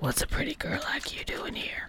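very hushed, low, raspy whisper. Telling a story, voicing a man who speaks to a girl, low raspy voice. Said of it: "A low and raspy voice asked".

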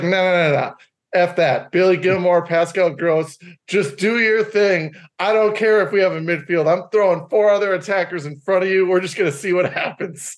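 defiant, dismissive voice full of bravado. Retelling a coach's attitude toward cautious play, imitating De Zerbi dismissing caution. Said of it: "De Zerbi's like".

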